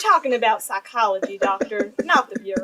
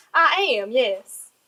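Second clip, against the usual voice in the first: very bad, fake, put-on Southern accent. Acting out a scene, answering a question in a god-awful Southern accent. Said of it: "I'm going to be doing a simply god awful Southern accent".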